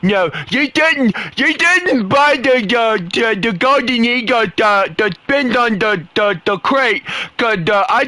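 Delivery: mocking, high, slow, complaining put-on voice. Imitating what a guy sounds like complaining, in a mock-complaining voice. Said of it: "I'm going to do this voice because this is basically what this guy sounds like when he's complaining".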